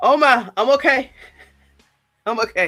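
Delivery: breathless, winded, catching breath. Reacting to an unexpected draft pick, catching breath. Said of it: "I had to catch my breath".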